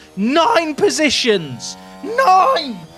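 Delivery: furious, angry in a German manner. Commentating as a driver drops nine positions, angry, German-sounding. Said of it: "I sound like an angry German person".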